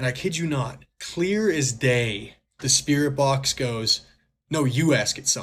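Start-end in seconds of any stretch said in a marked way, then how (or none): 4.5-5.4 cheeky, sassy talking back. Retelling what a spirit box said: imitating a sassy voice. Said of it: "in, like, a sassy voice".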